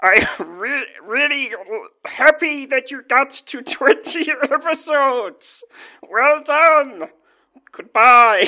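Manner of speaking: very high, loud, slow, drawn-out puppet voice. Faking a congratulation message for twenty episodes: Kermit the Frog voice. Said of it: "It's Kermit the Frog here".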